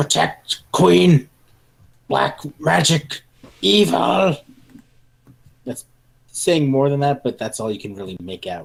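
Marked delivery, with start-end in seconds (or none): 0.0-4.4 ragged, barely coherent, high, rough, drawn-out shouting. A game master voices an enemy charging the players, shouting. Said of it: "And he's just shouting".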